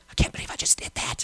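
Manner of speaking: put-on shaken, hushed, breathy, trembling whisper. Retelling her reaction after paying with the card: imitating someone shaking. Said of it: "she was, like, shaking".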